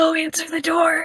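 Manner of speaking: tiny, high-pitched little whispering yell. Voicing a child urging someone to answer the doorbell: tiny whispering yell. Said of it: "The tiny little whispering yell".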